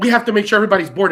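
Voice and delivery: put-on annoyed, put-upon, snippy brush-off tone. Retelling what a flight attendant said about boarding: imitating a flight attendant's attitude. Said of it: "with an attitude".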